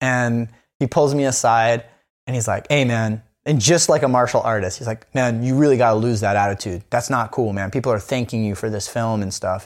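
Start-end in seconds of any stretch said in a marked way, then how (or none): none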